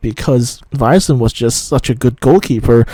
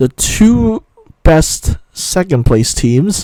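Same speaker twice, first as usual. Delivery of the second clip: slow, careful, spelled-out pacing, slightly pitched up; 5 semitones higher than usual. Explaining World Cup qualifying rules to listeners, saying this part slowly. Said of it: "I have to say that slowly".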